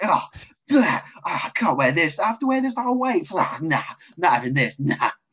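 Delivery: high, exaggerated complaining. Imitating the other speaker's reaction to wearing a face covering: mock over-the-top reaction. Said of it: "Extra over the top reaction".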